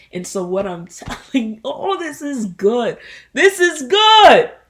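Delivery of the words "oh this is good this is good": full-blast shout, very high and very loud. Talking to listeners, the speaker breaks off mid-thought, yelling. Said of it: "I'm sorry for yelling".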